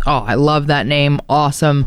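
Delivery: ordinary talk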